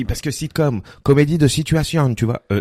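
clumsy, badly done Quebec accent. Retelling what a Quebec comedian told them, in a bad Quebec accent. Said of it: "Je le fais très mal, bon, l'accent".

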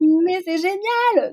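overjoyed, delighted gush, very high-pitched. Retelling how a woman reacted to news of the pregnancy, imitating a happy reaction. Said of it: "genre de bonheur".

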